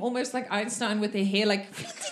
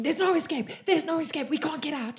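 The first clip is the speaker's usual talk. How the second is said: frantic, high, rushed panicky cries; 5 semitones higher than usual. Voicing men who run into the room in panic: panicked shouting. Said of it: "come running into the room shouting".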